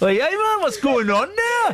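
very high-pitched, put-on Geordie accent. Showing off their best attempt at the accent, Geordie accent. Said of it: "that is my best Geordie accent".

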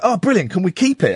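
ordinary delivery

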